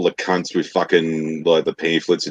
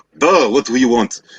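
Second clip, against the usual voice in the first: put-on Russian accent, pitched up; 6 semitones higher, 3 dB louder than usual. Retelling a prank on telemarketers, answering the phone in a put-on Russian accent. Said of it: "a Russian sounding kind of accent".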